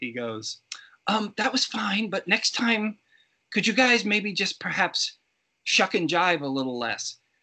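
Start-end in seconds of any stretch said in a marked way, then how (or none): 1.1-7.2 put-on nice British accent, pitched up. Retelling a director's note to basketball players between takes; very nice british accent. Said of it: "in this very nice British accent".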